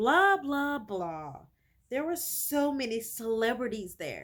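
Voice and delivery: mocking imitation voice. Speaker voicing a girl who mimics her sister: mocking imitation of her sister. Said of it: "she's in a way mimicking her sister".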